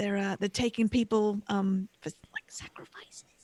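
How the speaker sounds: hushed voice, very quiet. In character, warning about people taken for sacrifices: saying it very quietly. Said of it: "She tries to say it real quietly".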